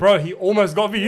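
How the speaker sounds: ordinary talk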